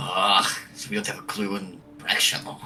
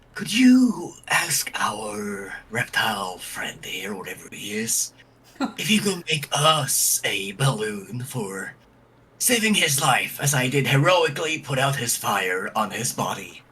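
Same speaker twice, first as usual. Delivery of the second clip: whispered aside in a character voice. Playing a character whispering a request into another character's ear: whispering in character. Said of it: "Malik is going to whisper into Ruben's ear".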